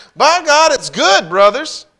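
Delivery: shrill, very loud, high-pitched yell. A narrator recounts calling out to his friends that night, yelling. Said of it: "I yelled to my friends".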